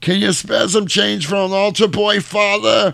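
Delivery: very high, pleading street beggar voice. Retelling a film scene where a priest hears a voice: imitating the bum's voice. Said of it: "And it's this bum's voice".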